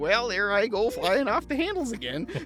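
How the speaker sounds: Midwesterner voice. Playing a Midwesterner character in a scene, Midwestern accent. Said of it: "you were playing a Midwesterner".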